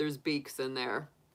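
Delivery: put-on flat, expressionless, low deadpan. Retelling a deadpan remark to a companion about canned meat: retelling a deadpan line. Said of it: "I just deadpan looked at her and I said".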